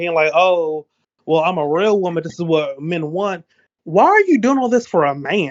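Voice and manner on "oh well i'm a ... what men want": self-justifying, defensive voice. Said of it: "in such a tone and such a defense".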